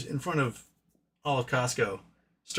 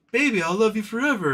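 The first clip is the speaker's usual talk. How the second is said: put-on begging, fawning, grovelling sweet talk, pitched up; 8 semitones higher than usual. Retelling what was said to a screaming girlfriend: imitating a groveling plea. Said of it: "totally untrue and grovelly".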